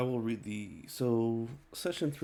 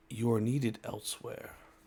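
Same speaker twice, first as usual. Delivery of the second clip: fast, knowing, wise yet foreboding ominous voice. Game narrator voicing a voice that calls to a player mid-combat, wise yet ominous voice. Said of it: "a wise yet ominous voice saying".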